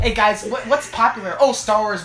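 normal talking voice

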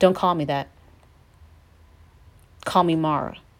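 sharp, cutting, curt tone. Acting out Naomi telling the people what to call her: imitating a sharp tone. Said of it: "just that sharp tone".

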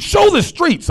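high-pitched, loud screaming. Recounting watching live fire coverage on tv, retelling screaming at the tv. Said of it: "Now I'm screaming".

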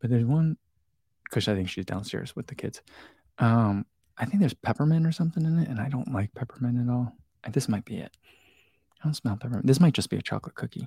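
secretive, hushed, half-whispered aside. Tasting cookies, the speaker half-whispers so the mother-in-law won't hear: half-whispering. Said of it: "I'm whispering because I don't want her to hear it".

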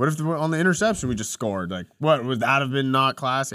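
normal talking voice

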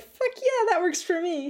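triumphant whooping cheer.

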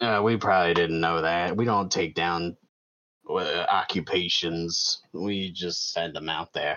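very low, smoky put-on smoker's voice. Voicing a character answering a question about a paladin, in a low smoker's voice. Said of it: "We're just gonna go really low and they're gonna sound like smokers".

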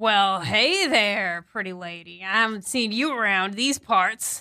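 put-on drunk man voice. In a role-play, a drunk man at the bar greets a woman walking up, drunk man voice. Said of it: "one of these like drunk guys".

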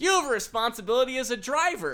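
mock loud, high-pitched yell. Retelling a near-miss with a driver, quoting a man yelling from the corner: retelling a guy's yell. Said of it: "this guy yells from the corner".

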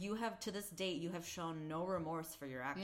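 normal talking voice

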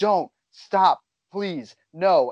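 imitated screaming. Describing a woman in a show screaming while a man is murdered, retelling a scream. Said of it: "she is screaming at the top of her lungs".

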